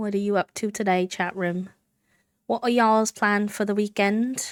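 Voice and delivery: put-on mild British accent. Streamer asking the chat room a question, in a light british accent. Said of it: "I broke into the light British accent".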